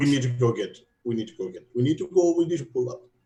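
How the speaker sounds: frantic, panicking put-on Russian accent. Urging the group to pull up: panicking in Russian accent. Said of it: "now I have Russian accent".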